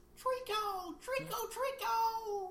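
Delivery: very high, soft, squeaky call.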